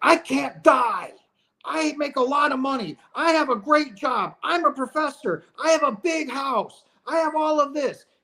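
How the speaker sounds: shrill, very high, drawn-out screaming. Acting out a man calling to his wife who cannot hear him, retelling a scream. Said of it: "he's screaming at the top of".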